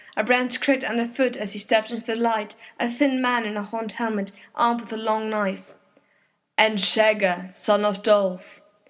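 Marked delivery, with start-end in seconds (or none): 6.6-8.6 deep, slow, deadly voice. An unseen speaker answers from the dark, in a deep, deadly voice. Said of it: "deep and deadly".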